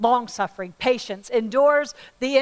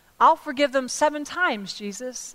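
plain

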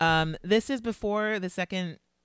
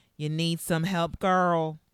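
broad Texan drawl, laid on thick. Speaker quotes a man who slithers in before she can answer, imitating Sergio's Texas accent. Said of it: "in the thickest Texas accent we have heard so far".

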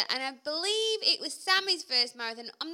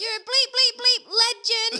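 mock loud shouting, higher and louder; 8 semitones higher, 7 dB louder than usual. Retelling cheering runners in the last mile: retelling a loud shout. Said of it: "this is really loud".

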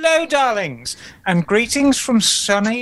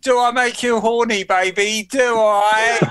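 put-on British accent. After naming the film character, the speaker quotes him in an Austin Powers impression. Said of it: "the least British thing you could ever say".

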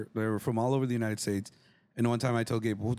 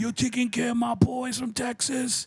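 put-on heavy New York accent, pitched very high; 11 semitones higher than usual. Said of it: "with his thick New York accent".

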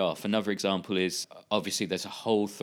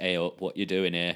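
put-on heavy northern English accent. Describing a disappointing film scene, quoting Pinhead in a heavy northern voice. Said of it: "in quite a heavy northern voice".

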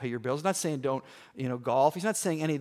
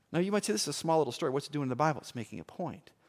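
usual speaking voice

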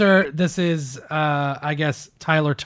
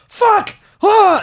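mock panicked, freaked-out outburst, very high, loud; 5 dB louder than usual. Retelling a shooting in a car, the speaker acts out the officer: imitating officer freaking out. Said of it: "like they're all freaking out".

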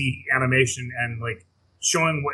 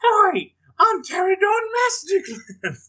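clumsy fake British accent, very high pitched; 4 dB louder than usual. Asked to say the line again without laughing, in a bad British accent. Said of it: "It's his British accent".

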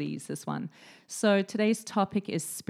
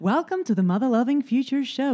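loud put-on American accent; 6 semitones higher, 5 dB louder than usual. Host opening the show with a welcome, in an American accent. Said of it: "Do you like my American accent?".

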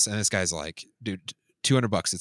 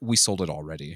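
mock self-satisfied, smug, low brush-off; 4 semitones lower than usual. Retelling what the seller said when the speaker walked over, retelling a smug remark. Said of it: "he very smugly says".

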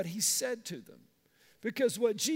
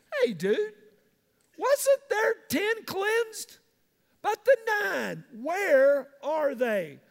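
annoyed, slightly put-out, raised and pitched-up complaining voice; 7 semitones higher, 5 dB louder than usual. Retelling the Gospel story of the ten cleansed, the speaker voices Jesus, mock-annoyed. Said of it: "Jesus is a little ripped about this".

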